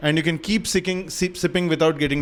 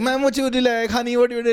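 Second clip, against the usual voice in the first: put-on camp waiter voice, pitched higher; 8 semitones higher than usual.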